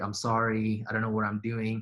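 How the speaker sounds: imitated tearful crying voice. Retelling an apology from a story, imitating someone crying. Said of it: "he was crying".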